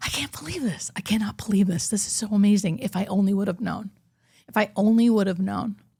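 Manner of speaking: acted, hushed near-whisper full of awe. Recounting what he said to her in her head, retelling an almost-whisper. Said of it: "Like almost whispering".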